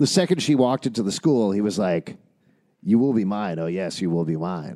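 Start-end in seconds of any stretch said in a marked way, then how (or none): 2.8-4.8 eerie, unsettling voice. Acting out how a boy claimed a girl at school: Wayne's World quote voice. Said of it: "Wayne's World".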